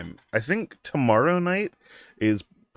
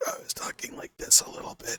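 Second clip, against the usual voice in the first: put-on messed-up, wrecked voice, much quieter. Describing waking up with a lost voice, demonstrating it: imitating a messed-up voice. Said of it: "a really fucked up tone".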